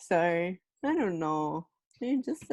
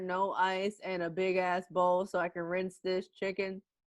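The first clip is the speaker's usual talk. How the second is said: ordinary delivery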